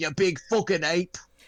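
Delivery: blunt, flatly thrown-out delivery. Retelling what Grayson says to the big monkey: imitating Grayson. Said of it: "Grayson's just like".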